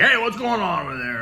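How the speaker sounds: high, loud, aggressive tone.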